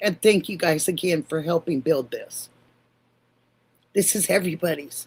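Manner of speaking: voice choking up, holding back tears. Thanking viewers for helping build this, holding back tears. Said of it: "I'm trying not to".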